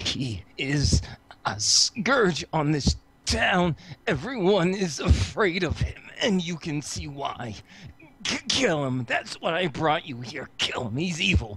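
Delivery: half-whispered stage whisper. Voicing James T tugging on Tom's leg in a game scene, half-whispering. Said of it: "and he whispers".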